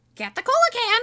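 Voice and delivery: shrill, very high, squawking parrot voice. Narrating a second-person story, the speaker voices the parrot's repeated command as a squawking parrot. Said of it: "the parrot squawks".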